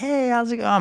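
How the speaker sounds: very high, sing-song, sweet, fake friendly voice.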